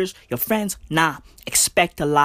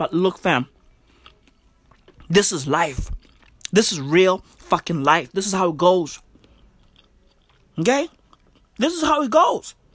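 talking while eating, with mouth full. Talking on the podcast while taking a bite of chicken: eating while talking. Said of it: "I'm sorry for eating on the podcast".

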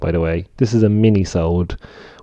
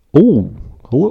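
high, slow, drawn-out cartoon frog puppet voice; 6 semitones higher than usual. Trying out this week's impression for the folks: Kermit the Frog impression. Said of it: "this week's impression is Kermit the Frog".

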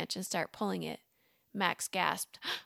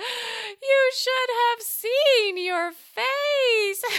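shrill, high, loud, drawn-out gasp through laughter; 13 semitones higher, 10 dB louder than usual. Narrator reads a woman doubled over laughing at him, gasping between laughs. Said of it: "she gasped between laughs".

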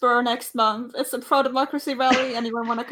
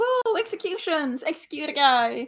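mock rowdy crowd cheer, swooping and whooping; 3 semitones higher than usual. Telling a story about an execution, the speaker acts out the onlookers, imitating a cheering crowd. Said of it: "Everyone else just going".

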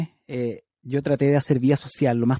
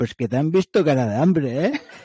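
put-on Castilian Spanish accent from Spain; 2 semitones higher, 4 dB louder than usual. Retelling what a Spaniard nearby said: Spanish accent. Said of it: "qué bien lo haces, el acento español".

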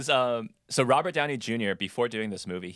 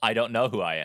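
ordinary delivery

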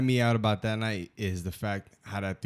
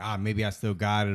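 normal talking voice

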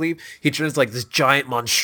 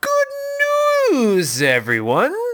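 very high sing-song, swooping, opening stretched out; 12 semitones higher than usual. Reminding the other player who Professor Putricide is: imitating Professor Putricide. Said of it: "He's the one who goes".

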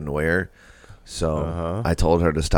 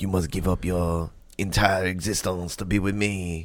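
put-on French accent, quieter; 3 semitones higher, 4 dB quieter than usual. Retelling chasing a princess around, imitating French duck farmer accent. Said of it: "speaking like a French duck farmer".

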